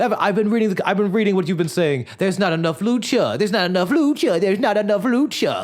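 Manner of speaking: mock paranoid, unconfident, unhinged babbling rant, high and rushed. Recapping a show, imitating a character answering complaints in an unhinged way. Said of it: "in a very unhinged, like there's nothing confident in the way he's addressing".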